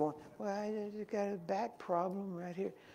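sweet, gentle little woman voice, soft and high. Retelling a little woman answering a man who asked what's wrong, sweet and gentle. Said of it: "real sweet and gentle".

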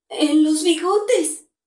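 raspy startled voice. Answering the inspector's firm questions, in a hoarse, frightened voice. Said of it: "Dijo con voz ronca Juan Darién, abriendo los ojos espantado".

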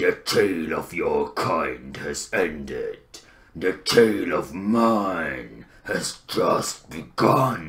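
regal troll king voice, leaning into and drawing out "mine". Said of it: "Throgg, King of Trolls".

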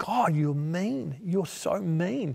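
mock tearful, slow, crying through sobs. Speaker retells praying and breaking down, acting out crying to God. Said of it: "And then I began crying".

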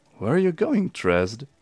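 unpleasant mocking voice. A figure calls after a woman walking unsteadily toward the gate; unpleasant mocking voice. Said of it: "His voice taking on an unpleasant, mocking quality".

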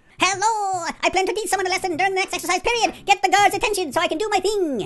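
put-on very high-pitched Irish or Scottish accent. Voicing a character's lines, doing a Jacksepticeye impression. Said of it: "he talks like this".

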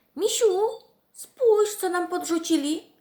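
very high-pitched, very loud cry. Reading a story aloud, Masza calls out to her friend the bear: exclaiming. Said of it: "Wykrzyknęła Masza".

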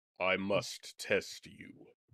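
very deep, slow, massive sphinx voice. Game master voicing a massive sphinx that has just appeared, in a massive sphinx voice. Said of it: "you would find that having appeared in it is a massive sphinx".

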